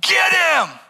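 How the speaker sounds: shrill, very high, loud scream from afar. Retelling how a girl in the distance screamed: imitating a girl screaming. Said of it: "this girl off in the distance just screams out".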